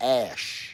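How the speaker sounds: "ash" drawn out slowly and deliberately. Talking about rubbing it on your face, ash said slowly. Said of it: "I gotta say that slow so it don't sound different".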